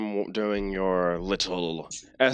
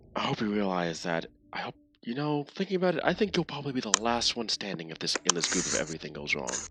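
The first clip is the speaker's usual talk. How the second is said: character voice whispering; 5 dB quieter than usual. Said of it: "Over's Bane whispers to Desi".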